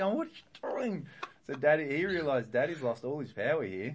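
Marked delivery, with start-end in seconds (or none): 0.2-1.1 mock high-pitched furious cry, losing control. Retelling a child tipping water onto the carpet: retelling own furious outburst. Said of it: "And I'm going nuts".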